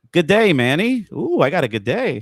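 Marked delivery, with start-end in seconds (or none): 0.2-1.1 loud, pitched-up, put-on Australian accent. Greeting Manny, in an Australian accent. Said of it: "I'm practically an Australian by now".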